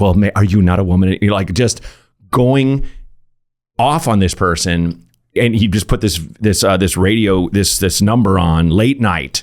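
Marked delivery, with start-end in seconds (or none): none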